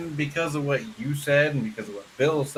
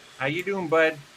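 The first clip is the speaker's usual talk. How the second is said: easy, relaxed Michigan accent; 2 semitones higher than usual. Demonstrating a Michigan accent in a casual greeting: Michigan accent. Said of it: "I'm talking my Michigan accent".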